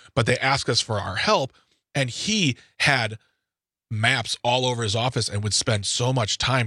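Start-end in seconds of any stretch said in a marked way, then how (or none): none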